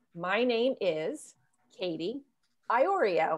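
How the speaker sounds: slow, pause, then final word hit hard. Teaching how to say your name clearly: pause before iorio, iorio punched. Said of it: "put a space, a part in between my first and last name".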